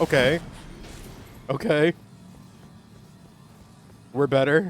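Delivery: terrified voice, cracking and breaking. Reassuring chat right after a scary moment, voice cracking, terrified. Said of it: "I say with like a voice crack because I'm terrified".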